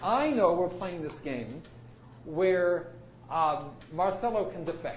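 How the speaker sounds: slow, drawn-out delivery.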